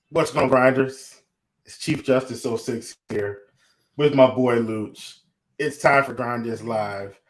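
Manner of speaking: gloomy, low-energy, deliberately melancholy, rattled off. A show host greets the grinders to open the show, deliberately melancholy. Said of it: "I'm coming in melancholy on purpose".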